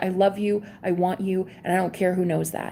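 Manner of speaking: ordinary delivery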